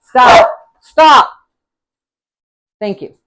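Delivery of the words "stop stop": raised shouting yell, pitched up. Cooking, then yelling at a barking dog to stop: yelling at the dog. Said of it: "Sorry, didn't mean to yell".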